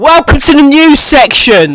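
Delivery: booming, very loud, drawn-out showman delivery. Announcing a new section into the mic: loud announcement. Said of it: "It's so loud".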